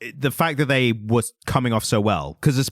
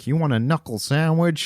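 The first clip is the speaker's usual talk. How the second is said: put-on American accent, higher pitch; 3 semitones higher than usual. Hosts compare English and American accents; speaker does a put-on American accent.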